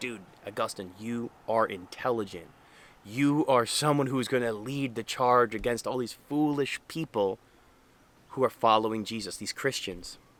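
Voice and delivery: ordinary talk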